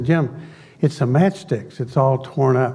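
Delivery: plain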